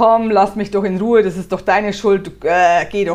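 put-on cranky, irritated, loud grumpy dismissive tone. Acting out a man who blames you, imitating someone annoyed. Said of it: "das hörst du auch am Tonfall ... diesen kotzigen Tonfall".

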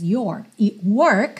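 American accent, curled r in "your" and "work". Showing the english words your and work in american accent, curled r. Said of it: "eu estou falando com sotaque americano, percebe que o meu R está enrolado".

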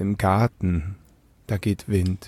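very quiet, low voice. Recounting a reply to Bernd about his Corona party, very quietly. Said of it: "so ganz leise".

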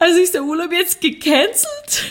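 spoken through tears, high-pitched and slow. Recounting what they told him back then, re-enacting speaking through tears. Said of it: "unter Tränen zu ihm gesagt".

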